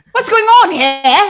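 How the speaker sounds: put-on full-on British accent, loud and bursting with anger. Describing an actor whose British accent comes out when he gets angry, mock-angry British accent. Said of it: "like their British comes out".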